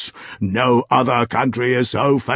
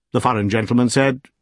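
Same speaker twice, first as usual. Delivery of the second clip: usual speaking voice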